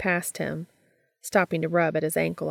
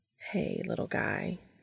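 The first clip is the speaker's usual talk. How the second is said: gentle, soft, soothing, calming coo; 2 semitones lower, 8 dB quieter than usual. Crouching at the edge of a tub, to a scrambling bat, cooing soothingly. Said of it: "Cass cooed soothingly".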